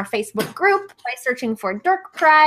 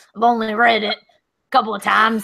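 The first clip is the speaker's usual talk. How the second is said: creepy, lecherous hobo character voice; 3 semitones lower than usual. Continuing the bit after the other speaker praises the voice: creepy sex hobo voice. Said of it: "creepy sex hobo voice".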